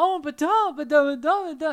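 shrill, very high, loud put-on British gibberish. Mocking how british people talk: mock british accent. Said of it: "You know how British people talk".

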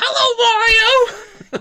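shrill, very high, loud Brooklyn cartoon voice, stretched "hello". Imitating Toad while describing his voice: Toad impression, high-pitched Brooklyn accent. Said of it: "high-pitched to fit his design".

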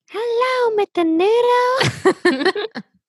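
very high, squealing puppet voice. Asked if it sounded like Elmo, the speaker repeats the greeting in Elmo voice.

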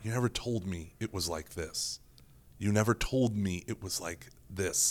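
whispered, barely audible, very soft, said twice. Retelling what a person kept saying inside Saint Peter's Basilica: imitating someone whispering. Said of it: "he just kept whispering".

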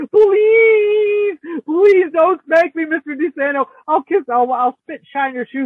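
high, loud, drawn-out tearful wailing. Retelling being taken out into the hall, retelling crying and begging. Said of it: "crying and going".

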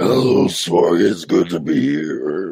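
loud, spooky, demonic voice, drawn out. Greeting the host on arrival: creepy haunted-house voice. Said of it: "You definitely worked in a haunted house".

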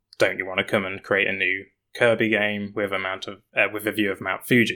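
ordinary delivery

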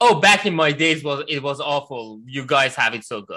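usual speaking voice

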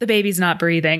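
put-on flat, unemotional voice. Retelling a film scene, quoting a character: imitating Aurora's non-emotional delivery. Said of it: "kind of non-emotional she is about it".

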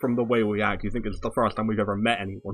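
ordinary talk

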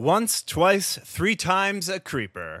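dramatic crescendo.

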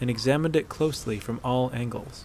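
plain reading voice

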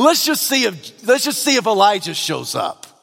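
mock arrogant, mocking, dripping with sarcasm. Retelling the crowd's taunt at the cross: imitating sarcastic mockery. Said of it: "in arrogance, in sarcasm, in mockery".

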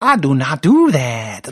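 very slow, dragged-out, sniveling drawl. Imitating the new replacement voice: weird sniveling Gambit voice. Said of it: "this weird sniveling".

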